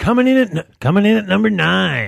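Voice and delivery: loud radio countdown voice. Announcing a place on the show's own countdown, do it in a Casey Kasem voice. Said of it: "I at least have to do that".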